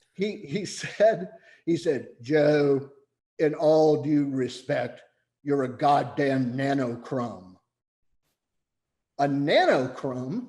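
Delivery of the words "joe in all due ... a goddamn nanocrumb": booming baritone voice. Retelling what a man from Australia said to Joe, baritone voice. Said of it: "in a baritone voice, it's like the voice of God".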